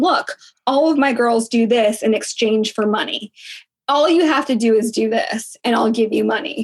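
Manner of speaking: normal talking voice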